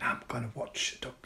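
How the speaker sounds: soft, hushed whisper under the breath, very quiet. At home, telling her viewers her evening plans: whispering. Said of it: "I don't know why I'm whispering".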